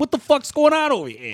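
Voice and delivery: put-on Boston accent, very high-pitched. Mocking a musician by imagining him as someone from boston: imitating a boston accent. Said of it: "Or he's from Boston".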